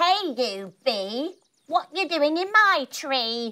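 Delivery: scary, greedy, high, hungry tweeting bird voice. Storyteller voicing a scary bird speaking to Enzo the bee, hungry scary bird voice. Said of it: "he tweets hungrily at Enzo".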